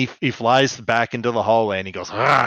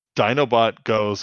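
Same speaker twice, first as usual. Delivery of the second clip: ordinary talk, nothing marked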